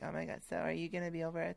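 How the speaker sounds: creaky, high, soft little schoolgirl voice. Retelling what a girl asked at recess, imitating her voice. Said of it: "I'm doing her voice".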